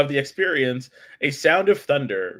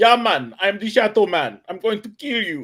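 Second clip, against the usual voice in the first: fake Jamaican accent, pitched higher; 6 semitones higher, 3 dB louder than usual. Describing the Shadow Man video game, quoting its character, faux Jamaican accent. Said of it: "he's got this like faux Jamaican accent".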